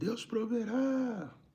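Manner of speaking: high-pitched, slow, shouted call.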